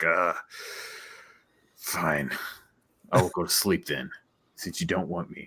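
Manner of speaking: put-on teenage girl character voice. Voicing a teenage character answering the players after they spoke with a tone: teenager character voice. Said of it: "being a teenager and promising what she thinks she wants".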